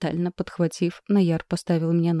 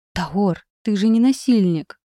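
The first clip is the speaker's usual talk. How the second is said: pleading, imploring, begging outright; 3 semitones higher, 4 dB louder than usual. A woman begs Taor, realizing what he intends: pleading. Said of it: "Теперь я говорила умоляюще".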